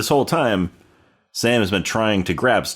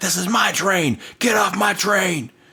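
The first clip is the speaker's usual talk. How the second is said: very high, shrill, drawn-out, furious shouting; 11 semitones higher than usual. Retelling how an angry ghost on a train yelled at someone: imitating an angry man yelling. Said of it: "starts yelling at him".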